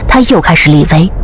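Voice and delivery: ordinary delivery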